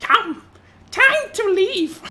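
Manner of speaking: very high, squeaky, loud goblin creature voice. A game master voices a goblin slinger addressing the group: goblin-like voice. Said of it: "says in a goblin-like voice".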